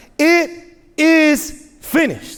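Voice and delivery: high, mock proclaiming cry. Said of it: "but he shouts".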